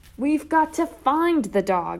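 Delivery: high, drawn-out hollering voice. Replying to a question in an alley, hollering. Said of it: "I hollered".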